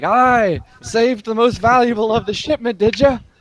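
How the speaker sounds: laughing in character voice. Voicing a ship captain who laughs while telling the party this: laughing while speaking in character. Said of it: "she laughs and she's like".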